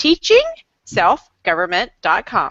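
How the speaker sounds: deliberately unhurried, even, careful, slowed-down pace. Host repeating a website address for listeners, slowing down. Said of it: "so I'll slow down".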